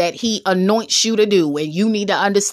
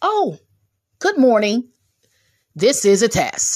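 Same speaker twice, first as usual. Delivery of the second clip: mock broadcast test announcer voice. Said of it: "here's what the broadcast says".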